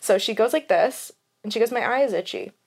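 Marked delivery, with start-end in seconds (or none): 1.7-2.5 hushed, really quiet, soft, matter-of-fact. Retelling mom complaining about her eye: imitating someone speaking quietly. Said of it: "really quietly".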